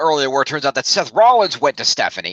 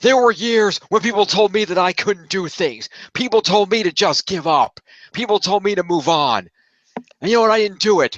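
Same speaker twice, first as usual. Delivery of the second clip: put-on scream, higher pitch; 6 semitones higher than usual. Retelling what was screamed at Foley: imitating someone screaming. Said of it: "he screamed this at Foley too".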